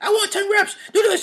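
very high, shrill, barking gym-coach voice. Quoting a coach in a commercial barking at a woman, imitating a coach yelling.

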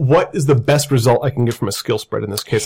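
ordinary talk, nothing marked

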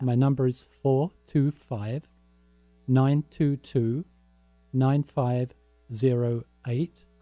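read slowly, group by group, long pauses between.

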